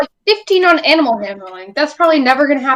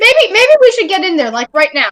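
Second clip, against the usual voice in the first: thin, very squeaky, high put-on voice; 6 semitones higher than usual. A player speaks in character as a dragon appears, in a very squeaky voice. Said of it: "I say in a very squeaky voice".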